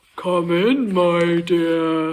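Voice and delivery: low, deep, raspy, scratchy wolf voice. Narrating the story, the wolf answers Little Red's knock: deep scratchy wolf voice. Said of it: "a deep, scratchy voice that answered".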